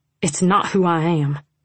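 ordinary delivery

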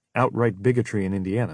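ordinary talk

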